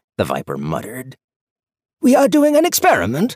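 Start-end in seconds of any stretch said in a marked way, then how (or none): 2.0-3.3 very high, loud, beaming with delight. Duskleaf, his anger momentarily forgotten, tells the Viper, beaming. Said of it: "Duskleaf beamed".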